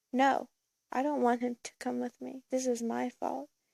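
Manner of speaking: usual speaking voice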